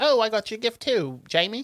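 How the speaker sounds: put-on English accent. Speaker retelling a story, quoting his mom giving him a gift, in an english accent. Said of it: "I'm doing an English accent".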